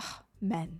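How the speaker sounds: very quiet little voice. Speaker acts out the voice in their head after walking behind a man: very quiet little voice. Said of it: "very quiet".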